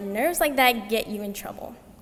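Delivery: ordinary talk, nothing marked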